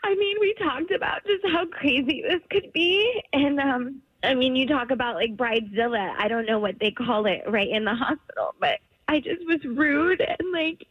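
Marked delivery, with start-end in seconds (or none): 0.0-3.2 super emotional, teary, choked-up crying. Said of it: "I'm super emotional right now".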